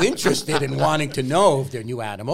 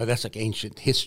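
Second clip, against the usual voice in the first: ordinary delivery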